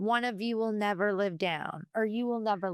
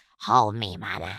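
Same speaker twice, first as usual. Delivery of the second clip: very low, deep, gravelly, raspy little growl; 13 semitones lower than usual. Imitating a sixteen-month-old with a raspy voice: raspy growly toddler impression. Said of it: "she has the raspiest voice ... she is all growl".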